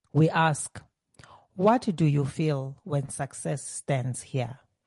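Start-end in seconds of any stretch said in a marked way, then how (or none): none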